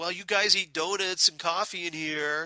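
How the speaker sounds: whiny, put-upon, whining tone. Recapping the lunch scene with Lucy and Chad, mimicking whiny Chad. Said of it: "Chad is all whiny and is like".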